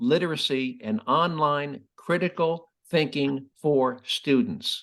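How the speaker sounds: deliberate, slow, careful, word-by-word reading aloud. Rereading a long title so people can follow it: reading slowly. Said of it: "I'm going to say it slowly".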